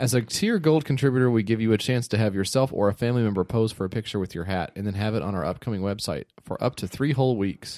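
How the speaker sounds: ordinary talk, nothing marked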